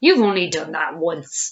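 snorted words. The smaller crocodile answers the enormous crocodile's boast, snorting. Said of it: "snorted the not-so-big one".

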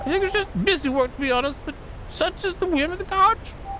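high, sing-song character voice.

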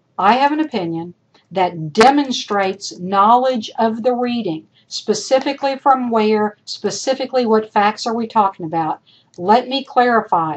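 usual speaking voice

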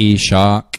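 slow, drawn-out Southern US drawl. Showing how a name sounds in Southern speech, slow, drawn-out Southern accent. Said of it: "if I were to say your name in a southern accent".

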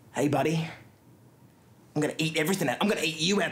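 intimidating, threatening, menacing voice. Practicing intimidation at yourself before tomorrow's competition: intimidating. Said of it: "practice my intimidation".

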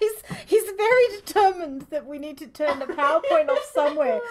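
high, giggling, cracking up laughing through the words.

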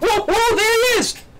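ecstatic, freaking out.

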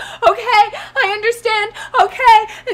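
slow, weeping, sobbing words. Retelling a man on the ground on his knees, imitating him crying. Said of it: "crying on his knees".

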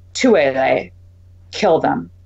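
offhand, low murmur. Jacques, without looking up, gives an order to no one in particular: murmured. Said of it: "Jacques murmured to no one in particular".

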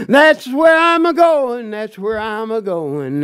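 put-on trembling, quavering, feeble old preacher's voice. Retelling how an old preacher sounded: imitating his trembling voice. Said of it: "his voice would tremble".

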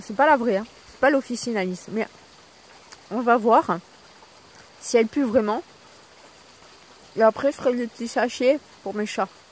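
chewing while speaking with a full mouth. Speaker addresses viewers while eating, talking with mouth full. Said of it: "je parle la bouche pleine".

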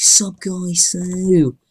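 hyper peppy vlogger energy. Retelling own old video intro: imitating own hyper shouty intro. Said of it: "I've been like".

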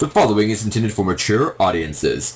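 bad announcer voice impression.

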